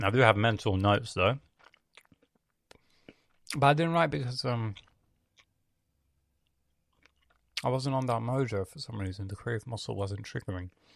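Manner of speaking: speaking while chewing. A speaker recaps a week without writing, talking while eating. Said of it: "I'm talking while eating".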